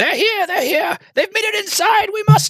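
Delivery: put-on very high voice of an old hag. Game master voicing three hags as the party nears the devil head, in a hag voice. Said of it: "the familiar voice of the three hags beginning to speak".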